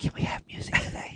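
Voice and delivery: soft, hushed, breathy whisper. Retelling what they whisper in the speaker's ear every day, imitating a whisper. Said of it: "every day they whisper in my ear".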